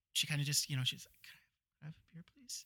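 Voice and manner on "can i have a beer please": mock-meek voice, higher, quieter, slower. Describing a shy, reserved woman, imitating her meek voice. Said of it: "the meekest voice".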